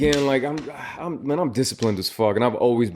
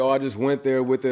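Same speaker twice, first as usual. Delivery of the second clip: ordinary talk, nothing marked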